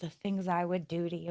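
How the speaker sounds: very quiet, very soft, close half-whisper. Retelling what a guy at an event said: imitating a half-whisper in the ear. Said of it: "whisper in my ear".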